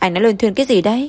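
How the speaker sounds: plain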